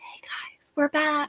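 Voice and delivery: very hushed, soft, polite whisper. Retelling how the other reader came back: imitating someone whispering.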